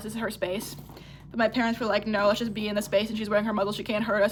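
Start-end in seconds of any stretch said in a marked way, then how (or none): none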